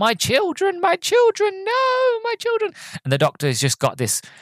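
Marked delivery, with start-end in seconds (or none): 0.0-2.7 very high, climbing, drawn-out rising shriek. Retelling a scene where the Queen's children are killed: imitating the Racnoss Queen screaming. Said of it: "she's screaming".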